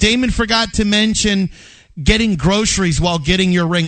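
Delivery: ordinary talk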